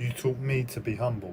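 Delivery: ordinary talk, nothing marked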